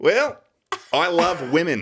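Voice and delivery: high-pitched, loud Australian accent. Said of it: "you sounded like Steve Irwin".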